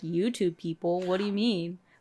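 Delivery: ordinary talk, nothing marked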